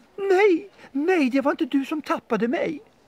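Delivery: very high, shrill shrieking cry. Narrator reads a sausage answering a dog that wants to eat it: shrieking sausage voice. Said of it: "skrek korven".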